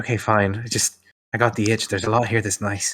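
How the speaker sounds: snickering, sniggering while speaking. Voicing a character answering a whispered warning: snickering while speaking. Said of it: "She kind of snickers back".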